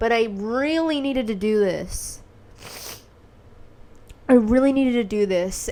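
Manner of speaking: tearful, crying while speaking. Speaker explaining a hard decision they needed to make, crying. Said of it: "And I'm crying so much right now".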